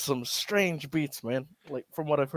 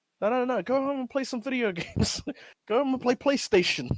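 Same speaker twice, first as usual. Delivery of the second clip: mock, fed-up, pitched up, barely holding temper; 8 semitones higher than usual. Retelling what a mayor on video said to people in public, mimicking him about to snap. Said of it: "he's about to lose it".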